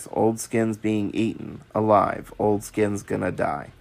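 low, flat, level monotone drone. Retelling a dream where a figure narrates wolves attacking, Old Skin's monotone narration. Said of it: "he kept narrating the events in a monotone voice".

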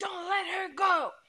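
very high, frightened, scared scream. Retelling a dispute with a dog's owner over his dog; retelling a scream. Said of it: "I'm screaming over him".

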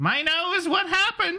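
very high, squeaky cartoon cat voice. Reading a script aloud with a friend, Meowth voice. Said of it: "Meowth voice".

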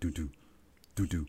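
low, soft heartbeat sound doo-doo. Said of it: "you can, like, feel the heartbeat".

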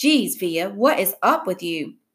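ordinary delivery, nothing marked

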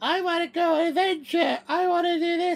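put-on very high toddler voice. Talking about a game she played, doing Peppa Pig like a four-year-old. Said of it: "She she just sounds like a four or five year old".

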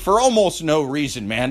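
ordinary talk

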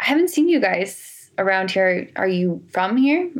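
put-on German accent. Retelling what an old german man said to them, in a german accent. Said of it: "Of course, in a German accent".

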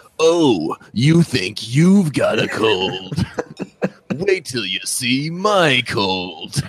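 slow, voiceover-style announcer voice. Imitating a friend's bit about having a cold: Adam Hart's voiceover guy voice. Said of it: "a really good, uh, voiceover guy voice".

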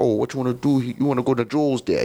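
put-on New York street accent. Retelling getting off the train, the speaker imitates a cop's reply in a New York accent. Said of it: "he had the real New York accent".

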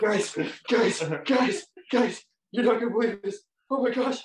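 high, frantic, thrilled, panicked outburst. Speaker retells opening the phone downstairs with parents: retelling excited panic. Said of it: "I like had a little panic moment".

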